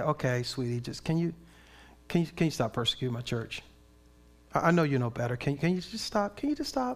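quiet, low, gentle tone. Contrasting two ways God might speak, the speaker acts out a still small voice. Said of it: "a still small voice to say".

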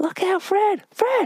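very high, long, carrying, drawn-out yell. Retelling a warning to a worker on a ladder: imitating people shouting a warning. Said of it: "we're all shouting".

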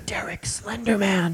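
hushed whisper. Imagining someone peeking into a school and whispering to the children, whispered.

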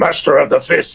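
loud, raspy, gravelly fighter voice. Performer demonstrates the character they voice, gravelly Akuma voice. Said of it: "he's very gravelly, his voice".

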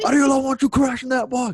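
put-on yelling. Retelling what he kept yelling while the drill was going on: imitating someone yelling. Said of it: "he's just yelling".

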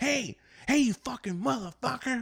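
acted out, very high, piercing, shrill yell. Retelling a man yelling at him while his girl sits in the car, retelling a yell. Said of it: "he's yelling over my girl's side".

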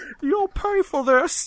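high, slow, loud, squeaky cartoon voice.

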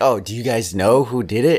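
acted, keen, eager, excited tone. Retelling how a movie character asked the others a question, imitating excited speech. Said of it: "because he says it like all excited".

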